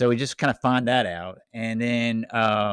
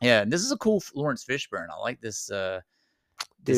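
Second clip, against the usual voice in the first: ordinary delivery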